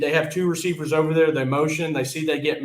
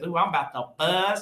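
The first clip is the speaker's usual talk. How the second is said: put-on little old man's voice; 2 semitones higher, 3 dB quieter than usual. Retelling a viral video, imitating the actor Leslie's voice. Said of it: "He just talks like this".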